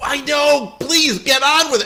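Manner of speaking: very high, loud, exasperated shout.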